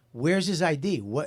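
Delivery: ordinary delivery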